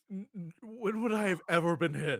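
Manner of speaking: high, loud weeping wail, stammering at start. Asked whether they have never been hit before, answering while crying. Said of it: "Fully crying".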